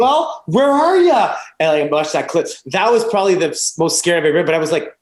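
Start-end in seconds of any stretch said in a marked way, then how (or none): 0.0-1.4 very high, stretched-out, drawn-out angry yell. Repeating the angry driver's words: imitating someone yelling.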